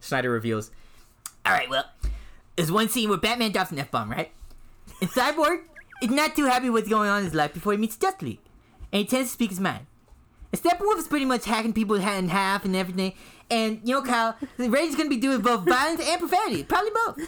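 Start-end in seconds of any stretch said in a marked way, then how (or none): 1.5-17.3 high-pitched put-on character voice. Reading a quote aloud after being asked for an Eric Cartman voice. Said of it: "read exactly what you read, but in an Eric Cartman voice".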